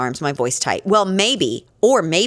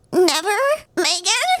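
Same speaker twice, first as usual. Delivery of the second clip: put-on little squeak, very high squeaky baby voice. Repeating a line the family says a lot, in a squeaky baby voice. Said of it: "I squeak, ... That's my sister's baby voice".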